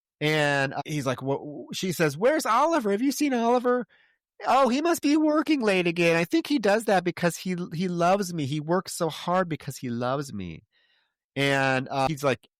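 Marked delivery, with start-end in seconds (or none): 2.2-10.6 put-on, higher, childlike voice of a ten-year-old. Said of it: "Now she's talking like a ten-year-old child".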